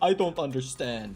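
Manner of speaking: ordinary delivery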